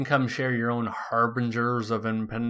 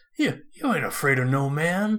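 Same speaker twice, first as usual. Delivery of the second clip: slow, put-on brave tone with stammered start; 4 semitones higher than usual. Quoting a movie line, imitating fake bravery. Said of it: "a fake brave when he says".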